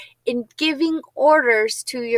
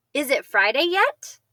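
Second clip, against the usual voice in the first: slight questioning rise in pitch on yet. Showing how the voice goes up when asking a question: slight rise on yet. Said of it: "My voice goes up a little bit when I ask a question".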